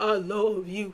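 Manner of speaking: shaky, quavering, trembling, wobbly voice. Retelling how someone else said a line: imitating a shaky voice. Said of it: "it's the shakiness in the voice".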